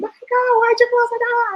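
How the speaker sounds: shrill, very high, screamed delivery. Retelling walking into a door the son had closed: imitating her own past screaming. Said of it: "And I'm here screaming".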